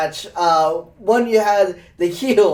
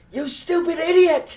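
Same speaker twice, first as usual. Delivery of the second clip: mousy, angry, squeaky voice, very high; 9 semitones higher, 3 dB quieter than usual. Talking about wrestling promos, the speaker mocks Jericho's insults: mousy angry Jericho impression. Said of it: "in that, like, mousy, like, angry voice".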